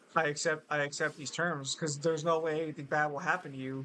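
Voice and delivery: ordinary talk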